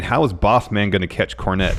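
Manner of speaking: ordinary talk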